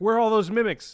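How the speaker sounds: loud, frantic voice.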